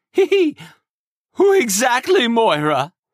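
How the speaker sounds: trembling, shaky, very high voice. A lord presses his servant for details, in a shaky voice. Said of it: "he pressed, voice shaky".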